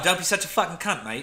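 London Cockney delivery. Showing how they talk cockney slang in europe, british cockney accent. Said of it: "I'm like Cockney slang, British, all that shit".

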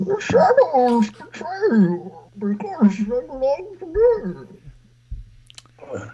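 performed voice, very high and swooping. Performing a line when another speaker asks for it: Bane voice. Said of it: "tremendous Bane impression".

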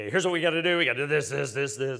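urgent, commanding, barked delivery. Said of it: "I could take charge and be".

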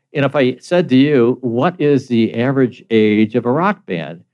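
ordinary talk, nothing marked

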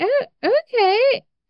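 surprised, high-pitched, slow reply.

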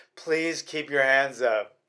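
begging, imploring, pleading call. Retelling how a fighter's corner pleaded with him: imitating a trainer pleading.

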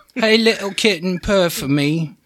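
put-on British accent. Asked to read the lines again, the speaker puts on a british accent. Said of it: "Put a British accent on that and read it again".

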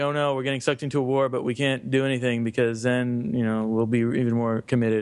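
normal talking voice

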